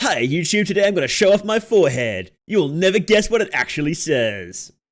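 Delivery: big, loud, energetic youtuber intro voice. Opening a tier list video, in a YouTuber intro voice. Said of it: "Is that a good YouTuber voice?".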